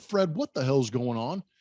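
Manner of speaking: plain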